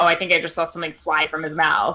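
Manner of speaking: usual speaking voice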